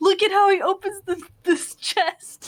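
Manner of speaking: very high, tearful, drawn out, crying while talking. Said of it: "in tears still".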